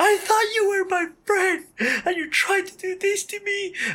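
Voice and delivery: very high-pitched shrill shout. Retelling being woken at 2:30 by a lady yelling at her friend, imitating a woman yelling. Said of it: "a lady yelling at her friend".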